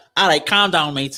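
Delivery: put-on Liverpool Scouse accent. Explaining how to get into an accent, a speaker demos a Scouse accent. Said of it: "if I was to do a Scouse accent".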